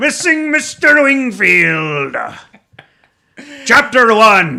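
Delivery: Scottish-accented voice. Speaker tries out an accent reading a book title: Scottish accent. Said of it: "that's Scottish".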